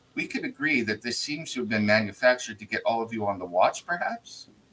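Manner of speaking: voice dropped slightly. Retelling what a woman said to the group, a lowered voice. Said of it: "she kind of lowers her voice a little bit".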